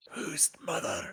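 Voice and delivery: whispered. Voicing a character asking a gator a question: whispering. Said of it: "He's gonna whisper".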